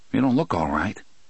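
ordinary delivery

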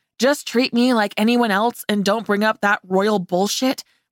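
ordinary delivery, nothing marked

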